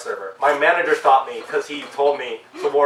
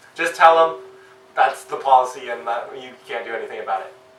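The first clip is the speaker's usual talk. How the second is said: usual speaking voice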